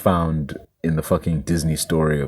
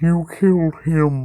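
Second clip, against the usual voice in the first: mock modulator-altered female voice, higher; 12 semitones higher, 3 dB louder than usual. Explaining how voices sound through a modulator: imitating a woman's voice through a modulator. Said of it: "a female puts her voice through a modulator".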